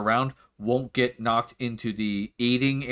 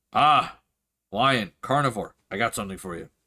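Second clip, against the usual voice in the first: orcish character voice; 2 semitones lower than usual. Voicing an orc at the bar calling someone over: orc barkeeper voice. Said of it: "kinda looks in and goes".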